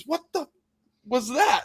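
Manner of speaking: put-on shrieking scream, very high and shrill. Retelling a rock hitting the truck during a phone call, imitating a woman screaming. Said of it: "and she screams".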